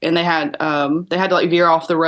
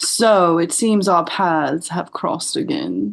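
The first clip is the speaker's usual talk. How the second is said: smug, arrogant confidence, slow and unhurried. Showing the person who will voice a confident character how he speaks, arrogant and slow. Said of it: "he speaks a little bit more like arrogantly and slow".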